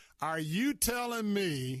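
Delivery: put-on high, slow, drawn-out thick old Southern accent.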